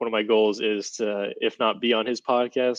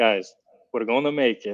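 put-on Brazilian accent in English. Recalling a professor's encouragement in hard times, imitating Professor Bruno's Brazilian accent. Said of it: "in his Brazilian accent".

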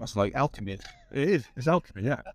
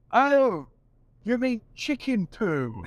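exaggerated English accent, very high, very slow, drawn out; 12 semitones higher, 4 dB louder than usual. Retelling own reply to a frustrated man: very English manner. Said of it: "I went so English".

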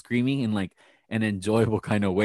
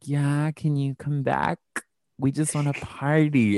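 heavily laid-on put-on sexy voice; 4 semitones higher than usual. Retelling a phone call where Porsha Williams put on her sexy voice. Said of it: "Portia put on her sexy voice".

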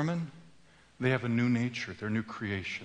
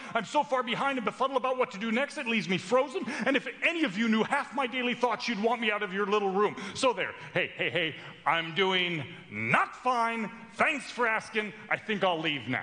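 put-on yelling out, higher; 10 semitones higher than usual. Retelling addressing a quiet room, feeling rejected: retelling a yell. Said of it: "finally I yell out".

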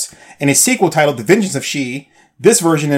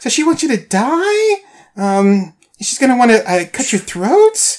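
put-on upspeak, everything rising like a question; 10 semitones higher than usual. Mocking a warrior character's delivery to another speaker: imitating question-like upspeak. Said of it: "everything she says sounds like a question".

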